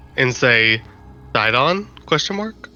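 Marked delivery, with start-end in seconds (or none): 1.4-2.6 secretive, hushed, leaned-close stage whisper. Half-whispering a question into a companion's ear in character: quiet half-whisper. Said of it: "as quietly as possible whisper into her ear".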